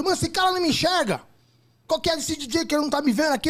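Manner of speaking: high-pitched yell. Retelling complaining that the DJ did not see him: imitating his own shouting. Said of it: "Eu gritando".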